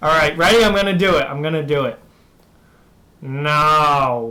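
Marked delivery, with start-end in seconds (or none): 3.2-4.3 the word "no" drawn out long. Answering a viewer's request to say no: Squidward voice. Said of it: "wants me to say no like Squidward".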